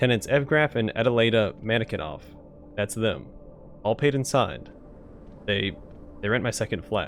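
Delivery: ordinary talk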